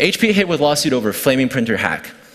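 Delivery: ordinary talk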